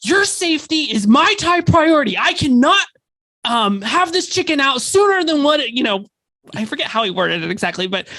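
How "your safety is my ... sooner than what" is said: put-on irate, mad-sounding, pitched-up voice. Quoting what a man said about cooking the chicken, retelling an irate tone. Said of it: "in this kind of just irate tone of voice".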